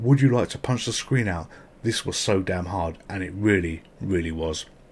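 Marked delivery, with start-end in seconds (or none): none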